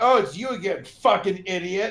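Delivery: acted, loud, angry, berating outburst. Retelling answering a scam caller who picked up again, retelling angrily berating a scammer. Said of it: "I started like ripping into him".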